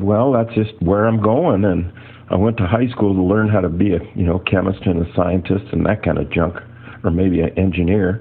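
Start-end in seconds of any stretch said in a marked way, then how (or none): none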